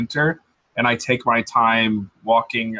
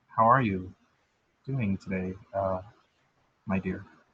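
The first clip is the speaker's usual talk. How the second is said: very quiet, soft, hushed, lower pitch; 3 semitones lower, 8 dB quieter than usual. Greeting someone who then complains they cannot hear, speaking very quietly. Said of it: "Why are you speaking so low?".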